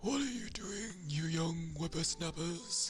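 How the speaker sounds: put-on very high, strained, straining old man voice. Doing the voice the speaker uses in a game: strained old man voice. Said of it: "That old man, it just sounds like he's constipated or something. It's like the one I do in in the game".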